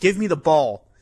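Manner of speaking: screaming, insistent call. Retelling a player screaming for the ball: imitating someone screaming. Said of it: "screaming at him".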